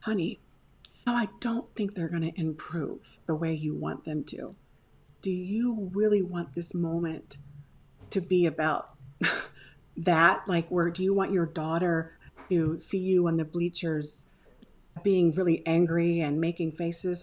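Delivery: whispered voice. Retelling words said to a husband on the bleachers: imitating own whisper. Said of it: "So I whisper to him".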